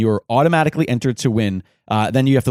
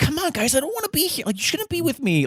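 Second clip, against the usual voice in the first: very high, whiny emo voice; 6 dB quieter than usual. Retelling a bit as the moody Batman knockoff: imitating a whiny emo kid. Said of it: "sort of like a whiny emo kid".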